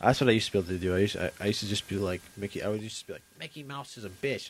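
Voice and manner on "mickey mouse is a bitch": cartoon-style duck voice. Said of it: "I would use the Donald".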